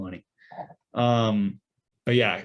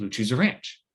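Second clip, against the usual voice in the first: ordinary talk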